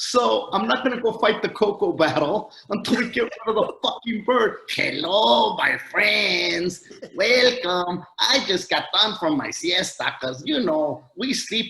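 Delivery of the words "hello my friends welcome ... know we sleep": talking parrot voice with put-on Mexican accent. Ranting about a voiceover parrot, quoting it in a mock Mexican parrot voice. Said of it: "that's a real Mexican using that voice".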